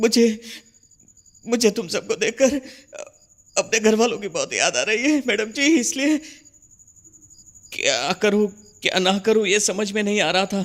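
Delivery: weeping. Answering the madam who asks why he is crying, crying. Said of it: "क्यों रो रहे हो?".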